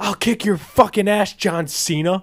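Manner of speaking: put-on high, very drunk yelling scream. Retelling a blackout-drunk dad at an event yelling at a wrestler, imitating a drunk dad screaming. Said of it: "And he's up screaming".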